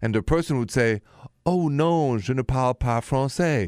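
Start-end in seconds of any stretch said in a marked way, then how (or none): 1.5-3.7 put-on slow French spoken in an English accent. Retelling a tourist's reply in French: English accent speaking French. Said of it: "with the English accent".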